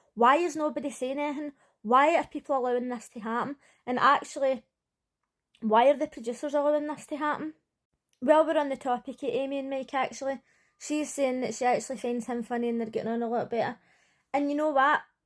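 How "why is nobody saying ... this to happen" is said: ordinary talk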